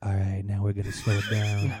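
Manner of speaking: low, late-night New York radio DJ patter. Describing a voice style, imitating a late-night New York City DJ. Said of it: "like that New York City like late night DJ".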